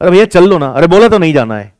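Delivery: firm, forceful, authoritative. Acting out refusing to go to Nehru Vihar: mock-authoritative refusal. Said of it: "दैट इज authority".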